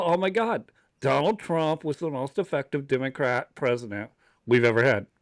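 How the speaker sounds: ordinary delivery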